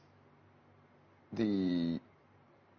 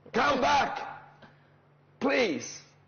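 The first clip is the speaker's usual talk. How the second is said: high, loud, slightly hoarse voice pushed out. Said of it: "That's slightly hoarsely kind of voice".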